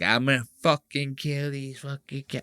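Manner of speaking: fuming, furious, menacing voice in mob-boss style. Describing how Puerto Rican moms threaten their kids, imitating an angry Puerto Rican mom. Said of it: "That's like a Puerto Rican mom that does that".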